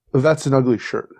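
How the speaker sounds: ordinary talk, nothing marked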